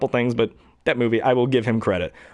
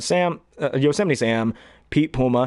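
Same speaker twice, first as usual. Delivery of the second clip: usual speaking voice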